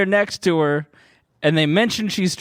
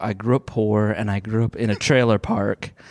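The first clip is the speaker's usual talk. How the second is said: put-on very solemn voice, much lower and slower; 7 semitones lower than usual. Acting out a past remark made during boring chit chat, in a put-on very solemn tone. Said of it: "like very solemn".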